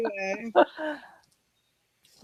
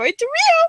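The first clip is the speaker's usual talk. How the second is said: very high, weird, squeaky put-on voice. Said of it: "like, really high-pitched and weird".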